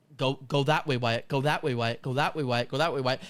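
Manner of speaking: ordinary delivery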